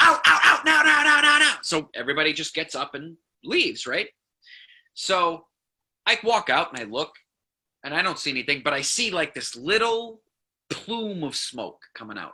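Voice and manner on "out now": mock yell, much higher, louder. Retelling a man ordering everyone out of a restaurant on fire, retelling a shouted order. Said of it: "he's like".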